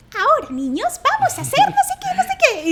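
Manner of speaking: tiny, very high, squeaky sing-song puppet voice. Retelling rehearsing a fox puppet program, addressing the children in a little puppet voice. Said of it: "haz una vocecita".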